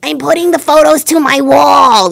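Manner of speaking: put-on high, slow, unhurried elderly woman voice. Retelling a commercial's line from an old woman in a nursing home: imitating an old woman from a commercial. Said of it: "the old woman in the nursing home".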